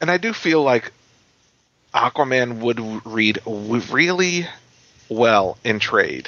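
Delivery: deliberately measured, slow, careful phrasing. In conversation about reading comics, said a little slowly. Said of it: "I had to say that a little slowly".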